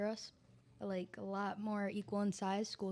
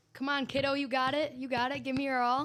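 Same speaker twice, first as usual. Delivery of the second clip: booming, very loud, pitched-up encouraging voice; 5 semitones higher, 8 dB louder than usual. Answering a request to impersonate the coach at practice: imitating the coach. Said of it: "do an impersonation of your coach?".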